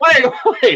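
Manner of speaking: very high giggling, laughing through the words. Trying to regain composure, laughing while talking. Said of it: "I gotta stop laughing".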